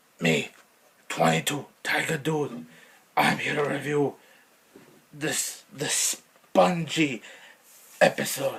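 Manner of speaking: put-on caveman voice. Introducing a SpongeBob episode review: put-on caveman voice. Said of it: "I try my best to do a caveman".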